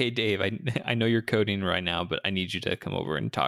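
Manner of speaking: ordinary talk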